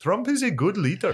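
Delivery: practiced, put-on Indian accent, very high pitch. Practicing an accent after being told to practice, put-on Indian accent. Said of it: "Working on it".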